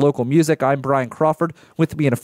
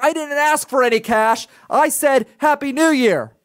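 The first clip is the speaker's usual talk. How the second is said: mock argumentative, confrontational, pitched very high; 11 semitones higher than usual. Retelling a man's retort after being refused cash: imitating a confrontational man. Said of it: "gets real confrontational".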